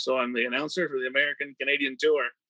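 usual speaking voice

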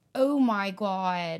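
put-on loud Western Pennsylvania accent. Showing how people talk in Western Pennsylvania: Western Pennsylvania accent. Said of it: "the Western Pennsylvania accent is".

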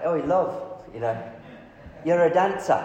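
put-on English accent. Retelling what a man said from his car window to a dancer, British accent. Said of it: "he's in his British accent".

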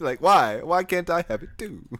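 high, aggrieved, spiteful, mad whine. Teasing the other speaker about their controller complaint, mimicking them: mock-mad complaining. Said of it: "you sound so mad".

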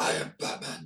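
disturbingly bad, breathy, creepy whisper. Watching a commercial with others, joking in a bad Batman voice. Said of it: "That's not a good Batman voice".

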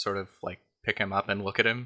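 ordinary delivery

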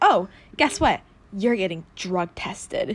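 theatrical, dramatic movie-style announcement voice. Retelling how mom announced a drug test: imitating mom's dramatic movie-like announcement. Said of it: "she literally said it like that, like a fucking movie".

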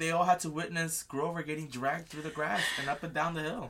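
plain

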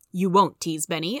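plain reading voice

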